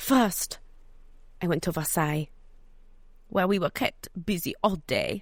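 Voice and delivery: bad, put-on French accent. Quoting the wise words of Madame Palatine: bad French accent as Madame Palatine. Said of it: "I can't do a French accent".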